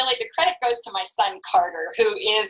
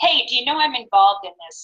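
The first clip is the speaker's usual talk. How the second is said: ordinary talk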